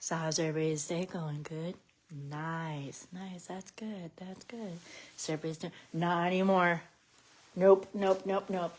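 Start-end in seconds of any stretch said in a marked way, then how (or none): 0.0-5.7 very quiet, low, drained and tired voice. Showing how the speaker sounds after making themselves tired, imitating own quiet tired voice. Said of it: "I get, like, all quiet".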